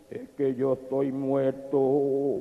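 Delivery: deep, sepulchral, very quiet grave murmur. Telling a story, the brother answers the other man in a grave, deep voice. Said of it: "con una voz grave le dijo".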